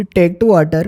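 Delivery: Indian-accented English.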